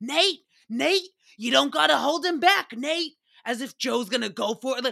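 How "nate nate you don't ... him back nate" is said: all-out high, loud screaming. Recapping a TV episode where two men are held back, retelling Joe's screaming. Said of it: "Joe starts screaming".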